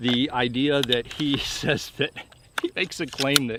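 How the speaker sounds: words broken up by laughter throughout. Critiquing a man's claims, laughing while talking. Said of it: "I'm sorry I'm laughing".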